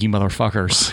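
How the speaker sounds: mock disappointed voice. Imagining a listening dad reacting to the show: imitating a disappointed dad. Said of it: "My dad listening right now is like".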